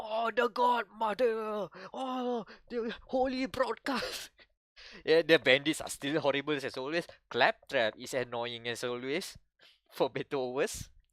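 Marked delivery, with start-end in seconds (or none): 0.0-4.3 slow, high-pitched worshipful wail. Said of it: "the rest of the bandits go".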